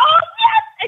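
put-on very high, loud, gushing, delighted excitement. Explaining dog training, the speaker acts out people praising a dog: imitating excited praise. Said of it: "they'll get really excited and be like".

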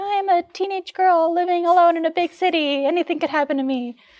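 put-on very high, anxious, paranoid teenage girl voice. Telling a story about living alone in college, imitating her 18-year-old self. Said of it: "I like that voice".

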